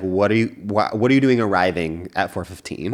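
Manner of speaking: usual speaking voice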